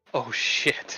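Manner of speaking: hushed whisper under the breath. Storyteller voicing a character about to walk through a door, whispering. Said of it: "he kind of whispers".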